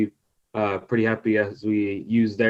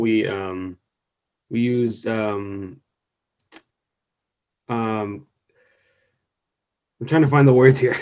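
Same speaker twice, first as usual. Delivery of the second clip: nervous, halting, hesitant, slower. Answering a question about survey feedback, the speaker is nervous and halting. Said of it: "Sorry, I'm kind of nervous".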